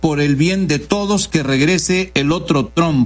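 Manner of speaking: ordinary delivery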